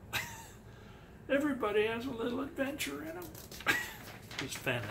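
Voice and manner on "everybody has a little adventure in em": put-on voice, high, fast, completely winded and breathless. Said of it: "It's my Fenn impression".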